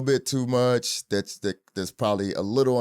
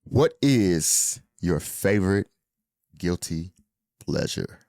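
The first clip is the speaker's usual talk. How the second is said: low, exaggerated, put-on seductive delivery; 5 semitones lower than usual. Interviewing a co-host, the host asks a question in a seductive voice. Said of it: "tried to sound so seductive".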